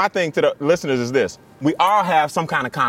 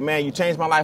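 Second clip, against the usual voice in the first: normal talking voice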